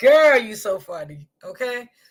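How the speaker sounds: high voice, words broken by laughter. Trying to start the story while still laughing at someone: laughing while talking. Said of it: "Let me stop laughing".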